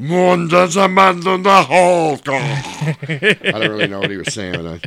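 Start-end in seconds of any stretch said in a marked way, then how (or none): 0.0-2.3 put-on Spanish-accented toy voice, higher and louder. Imitating a Hulk toy that speaks Spanish: imitating Hulk toy speaking Spanish. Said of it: "it spoke Spanish".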